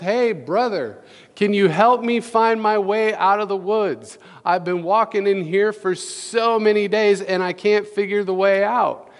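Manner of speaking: high, called-out voice. Telling a story of a man lost in the woods calling to another man, retelling a shout. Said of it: "he shouts".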